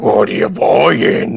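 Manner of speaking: very slow, creaky, rough shopkeeper voice. Asked to open a game with the merchant voice: merchant voice. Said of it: "do the merchant voice for me here".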